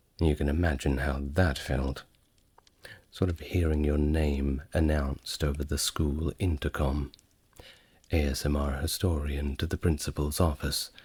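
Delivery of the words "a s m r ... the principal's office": ordinary talk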